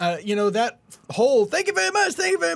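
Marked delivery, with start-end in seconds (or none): 1.5-2.6 very high, rushed, nervous, voice cracking. Describing a friend's parody stand-up act: imitating Bob's nervous cracking voice. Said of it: "His voice is cracking with every word".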